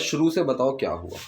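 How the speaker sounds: plain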